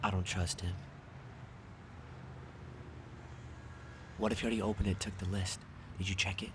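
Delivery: very quiet, hushed whisper under the breath. A character in a scene speaks privately about another man, whispering. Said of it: "you're doing a lot of whispering".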